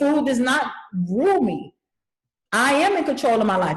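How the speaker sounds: wholehearted, certain, resolute, believing tone. Teacher models daily affirmations for students, saying them with conviction. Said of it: "You have to say it with conviction".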